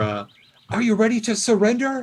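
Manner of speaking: faintly feminine voice. Game master voicing an unheard-before speaker, in a vaguely female voice. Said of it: "Another voice, vaguely female".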